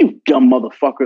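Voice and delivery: plain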